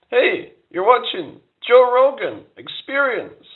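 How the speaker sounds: slightly whiny, very high, slow voice. Speaker imitates a podcast host's intro in a Joe Rogan impression. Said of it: "He's just got this kind of little bit whiny kind of voice".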